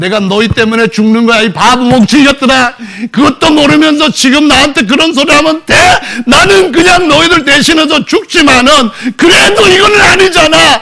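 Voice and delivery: mock furious, high, loud, crying angry rant.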